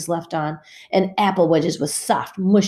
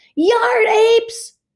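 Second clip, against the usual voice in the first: furious yell through tears, very high and shrill; 6 dB louder than usual. Narrating a girl yelling again as her eraser lands in Danny's hands, yelling in angry tears. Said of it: "She yelled again, tears of anger in her eyes".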